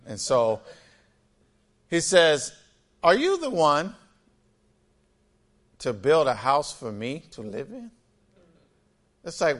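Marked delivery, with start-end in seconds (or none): 3.0-7.9 mock sarcastic tone, quieter. Reading a question God asks the king David: imitating a sarcastic question. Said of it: "he's asking it sarcastically".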